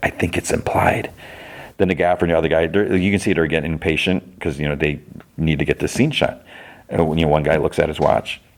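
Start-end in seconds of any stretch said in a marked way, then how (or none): 0.0-1.1 hushed, secretive whisper under the breath. Retelling what someone on a film set said: imitating a whisper. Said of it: "And he whispers".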